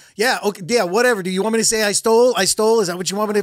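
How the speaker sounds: put-on, very defensive, dismissive brushing-off tone. Retelling how a man reacted when another guy spoke to him, imitating him getting defensive. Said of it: "he just got real defensive".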